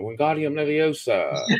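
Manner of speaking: bad put-on British accent. Describing a book's magic, contrasting it with Harry Potter's spell: Harry Potter impression. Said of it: "impersonation was spot on".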